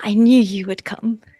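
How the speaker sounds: soft, knowing whisper. Millie, as soon as she sees Drestel, speaks to him: knowing whisper. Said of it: "she just kind of whispers uh, in this knowing way".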